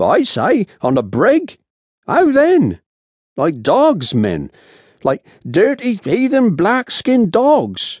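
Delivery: voice rising and lifted. A sailor complaining to the men about their treatment on the brig, voice rising. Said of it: "Matt's voice rose".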